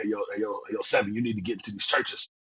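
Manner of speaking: put-on deep, heavy-set New York street accent. Retelling a fellow poet's encouragement; Harlem One Two Five's deep New York accent. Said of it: "this deep New York accent".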